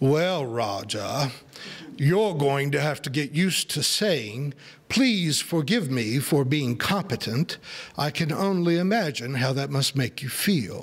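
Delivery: put-on thick, heavy, deep southern accent. Quoting what a man used to tell him, in a deep southern accent. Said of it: "in a deep southern accent and say".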